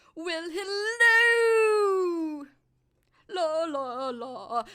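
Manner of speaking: very slow, high, loud, drawn-out talking-stomach voice. Recapping a sitcom episode's catchphrases, doing Jerry's talking-stomach voice. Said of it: "this is the voice that Jerry's girlfriend starts to hate".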